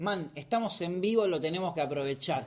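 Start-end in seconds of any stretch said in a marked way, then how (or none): none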